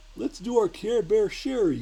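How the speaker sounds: put-on very high, loud, slow kids' TV voice. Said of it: "Does the teddy bear have a Barney voice?".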